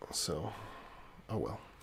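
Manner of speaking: talking very softly in a hushed voice.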